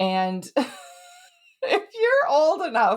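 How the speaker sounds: talking through laughter. Starting to compare something to a children's TV show, laughing while talking. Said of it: "I'm laughing because".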